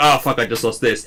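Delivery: normal talking voice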